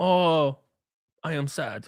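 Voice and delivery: fake Spanish-speaking accent.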